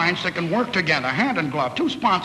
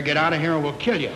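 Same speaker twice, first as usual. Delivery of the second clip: usual speaking voice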